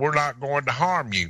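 put-on Southern woman's accent. Retelling what she said to him, in a Southern redneck woman's voice. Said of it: "but it was Southern redneck talk".

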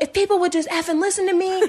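mock ranting, high-pitched, all worked-up shout. Speaker recounts a rental car worker's outburst, imitating him yelling. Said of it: "And he's like yelling".

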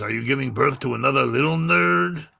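rough, creaky dog puppet voice. Retelling what was said to a pregnant woman, in the dog's voice. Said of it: "You got to use the dog's voice".

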